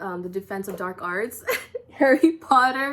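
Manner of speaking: very loud, laughing through words. Telling viewers about an evil attack on them, laughing while talking. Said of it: "I'm laughing".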